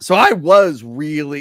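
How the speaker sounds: voice cracking mid-phrase. Starting to say how excited they were for a movie, voice cracking. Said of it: "my voice just cracked there".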